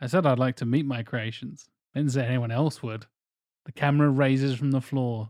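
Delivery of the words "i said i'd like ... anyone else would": ordinary talk, nothing marked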